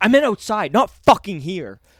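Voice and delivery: put-on furious, raging, very loud, shrill yelling. Retelling a woman's rebuke before she fetched the bouncer, imitating an angry woman. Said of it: "getting so angry".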